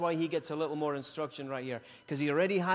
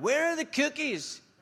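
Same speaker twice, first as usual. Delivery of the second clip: very high, shouted yell; 11 semitones higher than usual. Retelling yelling a question to someone in the other room: retelling a yell. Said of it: "I'm yelling to her".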